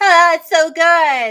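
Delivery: put-on slow LA drawl, high, loud, "good" stretched. Mocking what people say about it, in a put-on LA voice. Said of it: "you have the L A voice down pat".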